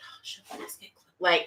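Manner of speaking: calm, hushed, slow, soft whisper. Re-enacting what they whispered to tasha in the circle, retelling their own whisper. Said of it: "and I kind of like whisper".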